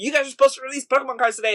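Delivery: put-on, high, insistent, demanding shout. Retelling a man who yelled at a store worker: imitating someone yelling. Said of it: "he was yelling at the dude".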